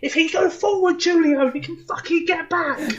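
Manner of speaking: put-on very high, thick Irish accent, shouted. Imagining a player shouting at a teammate during Power League, John O'Shea impression, put-on shouting. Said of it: "in a thick Irish accent, say, shouting".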